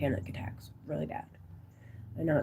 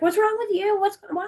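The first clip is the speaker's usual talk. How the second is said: high-pitched, alarmed voice. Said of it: "My sister's like".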